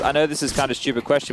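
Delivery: plain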